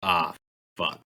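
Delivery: under the breath. Voicing a character reacting to a failed attack: under his breath. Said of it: "under his breath, he goes".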